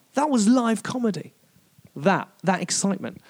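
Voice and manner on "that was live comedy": high, amazed swearing exclamation.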